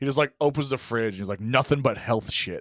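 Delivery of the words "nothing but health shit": put-on very angry, furious delivery. Retelling a movie scene where a boy opens the fridge: imitating someone super pissed. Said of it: "super pissed".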